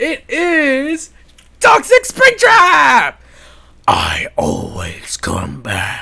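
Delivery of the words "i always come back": very deep, very low, slow, drawn-out character voice. Voicing a newly unboxed figure's line: Springtrap voice. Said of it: "That was actually not as good".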